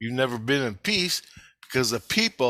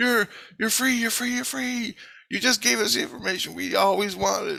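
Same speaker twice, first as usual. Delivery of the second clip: high-pitched screaming cries, repeated over and over; 8 semitones higher than usual. Retelling waking up to everybody around: imitating people screaming. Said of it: "Everybody's screaming".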